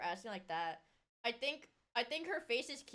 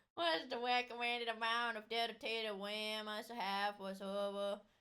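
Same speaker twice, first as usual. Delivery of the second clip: mocking put-on voice. Repeating another speaker's question back: mocking imitation of the questioner's speech.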